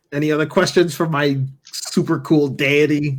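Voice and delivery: proud, boastful delivery. Asking the group for more questions for the deity: like introducing a cool older brother. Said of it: "Kyle sounds like he's m-, introducing his older brother to his friends".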